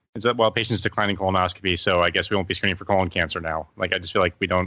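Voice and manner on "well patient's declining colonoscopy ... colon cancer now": usual speaking voice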